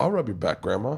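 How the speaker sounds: plain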